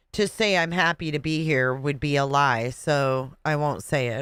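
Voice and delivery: plain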